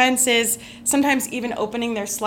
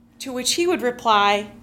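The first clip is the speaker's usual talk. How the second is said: ordinary delivery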